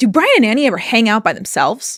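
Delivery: hostile, confrontational, angry, aggressive tone. Retelling how someone angrily asked about hanging out: imitating an angry, aggressive question. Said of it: "real angrily and aggressively goes".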